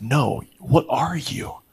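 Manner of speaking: put-on angry voice. Retelling a doctor visit, imitating a mad nurse. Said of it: "she got really mad".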